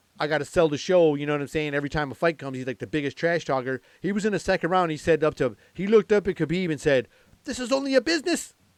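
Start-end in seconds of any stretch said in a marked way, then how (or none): 7.5-8.5 very high-pitched put-on Irish accent. Retelling what a fighter said to Khabib mid-fight, in his Irish accent. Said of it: "In his Irish accent".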